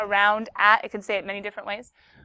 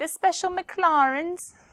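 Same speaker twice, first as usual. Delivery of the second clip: British accent and pronunciation, pitched up; 7 semitones higher than usual. Going over cards before a test, a speaker reads a card name in a British accent. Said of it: "I said McLaren with a British accent".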